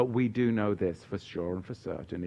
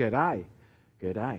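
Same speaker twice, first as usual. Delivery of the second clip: terrible, bad put-on Australian accent. Reading out a question from a listener in Australia, greeting him in a bad Australian accent. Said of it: "That's a terrible accent there".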